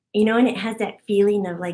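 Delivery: ordinary talk, nothing marked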